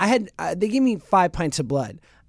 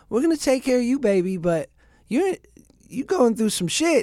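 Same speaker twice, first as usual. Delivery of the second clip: put-on, pitched-up Southern accent; 6 semitones higher than usual. Retelling what a hospital nurse said: imitating a nurse's Southern accent. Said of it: "this great Southern accent".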